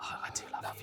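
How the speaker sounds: hushed whispering voice. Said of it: "why were you whispering?".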